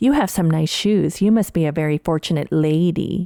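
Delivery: play-acted, disapproving, rebuking, reproachful tone. Reenacting the same remark again, as often retold to friends: imitating a rebuking tone. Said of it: "I have perfected my reenactment of that".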